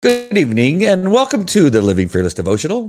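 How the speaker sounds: high, loud, swooping delivery. Opening the devotional with a greeting: Tucker Carlson voice. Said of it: "Did I sound like Tucker Carlson?".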